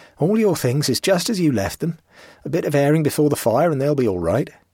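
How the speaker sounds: earnest, slightly offended. The old man replies to the castaway, Master Tom: earnest, slightly offended. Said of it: "said the old man earnestly, almost with an offended air".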